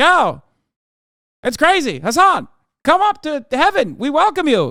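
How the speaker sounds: put-on very high, booming mid-Atlantic accent. Speaker voices God calling Hassan up to heaven, in God's mid-Atlantic accent. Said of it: "God had a mid-Atlantic accent".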